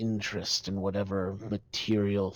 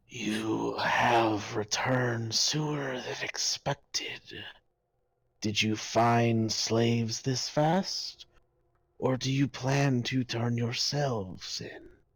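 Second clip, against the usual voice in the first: eerie creature voice; 3 semitones higher than usual. Voicing the aboleth, a voice that enters the players' minds: aboleth voice in their minds. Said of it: "hear a voice enter your minds".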